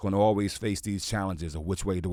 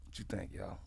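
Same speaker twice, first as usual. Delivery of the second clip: imitated whisper, quieter; 15 dB quieter than usual. Retelling what was whispered to Inspector Deck at a Christmas party: retelling a whisper. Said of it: "I whispered over to Inspector Deck".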